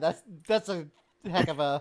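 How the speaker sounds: loud, speaking through laughter. Reacting to another player's joke, laughing while talking. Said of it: "I'm still laughing about that comment".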